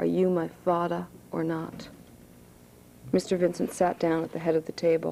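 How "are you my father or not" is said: eerie and low voice. Sherman speaks to mr. vincent, eerie and low. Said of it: "Sherman's voice was eerie and low".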